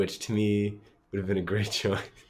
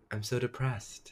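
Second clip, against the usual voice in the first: soft, flat, dead-level toneless monotone; 3 semitones higher, 7 dB quieter than usual. Speaker recaps an episode, quoting a character's line in a put-on soft monotone voice. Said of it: "in like this soft monotone voice".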